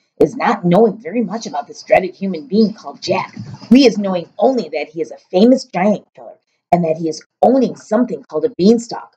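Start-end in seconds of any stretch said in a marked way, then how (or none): none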